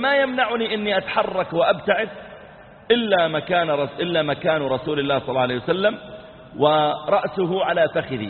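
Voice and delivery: plain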